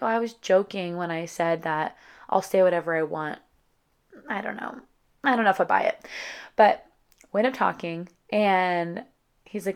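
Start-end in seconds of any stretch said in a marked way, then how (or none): none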